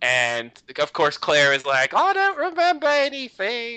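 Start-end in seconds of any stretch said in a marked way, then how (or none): 1.9-3.8 very high, best-effort attempted Australian accent. Speaker recapping a TV episode, quoting Claire: Claire in Australian accent. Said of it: "that was my best Australian accent".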